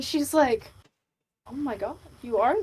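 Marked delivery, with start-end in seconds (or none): 1.5-2.6 soft, taken aback, a little flustered surprise. Voicing a character who reacts to a player's boast: flustered. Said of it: "gets a little flustered".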